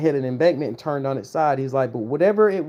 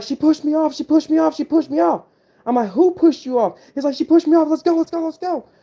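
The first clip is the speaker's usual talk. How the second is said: imitated screaming, higher in pitch; 12 semitones higher, 4 dB louder than usual. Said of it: "he's screaming to the top of his lungs".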